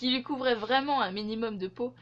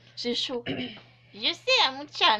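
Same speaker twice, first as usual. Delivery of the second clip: put-on grandma voice, louder; 3 dB louder than usual. Trying a voice for a tiny character, slipping into an old grandma voice. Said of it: "pourquoi ça finit toujours en mode grand-mère".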